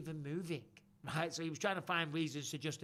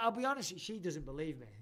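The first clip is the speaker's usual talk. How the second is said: plain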